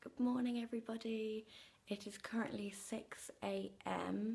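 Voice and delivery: quiet, soft, hushed whisper under the breath. Greeting everybody at six a.m., speaker whispers to avoid waking someone. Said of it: "I'm whispering".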